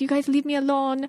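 not-so-good, bad put-on Spanish accent. Act out a woman from boston suddenly slipping into an accent, in a bad put-on spanish accent. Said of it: "I can't even do a good Spanish accent".

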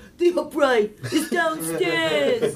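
put-on high, slow grandpa voice.

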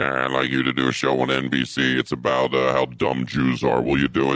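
very low, demonic devil voice.

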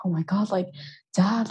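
mock freaking out, panicked, almost crying. Retelling a scary plane ride, quoting Becky to her dad, imitating Becky almost crying. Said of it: "she's almost crying".

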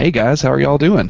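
overly chipper, high and loud. Host opening a post-game reaction podcast, greeting listeners, overly chipper. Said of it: "That's far too chipper".

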